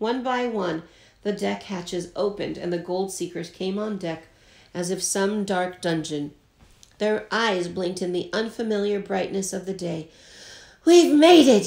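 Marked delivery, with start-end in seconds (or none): 10.9-11.7 loud, high hollering at full voice. Coming up on deck after the voyage, a gold seeker yells to the others. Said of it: "yelled Mountain Jim".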